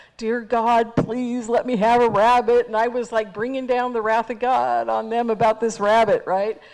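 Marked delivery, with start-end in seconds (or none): 0.2-2.7 very loud, mock, acted delivery. Retelling praying in the middle of a group, very loud prayer. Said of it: "very loudly".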